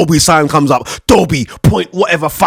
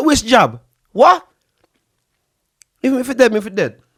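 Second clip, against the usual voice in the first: put-on high, old Jamaican grandmother voice, Jamaican accent; 6 semitones higher than usual. Retelling what your old jamaican grandma said, imitating her. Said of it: "my old Jamaican grandma didn't even get the jab".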